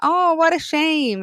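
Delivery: high, slow American accent, sympathetic.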